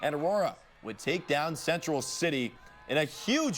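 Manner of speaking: ordinary delivery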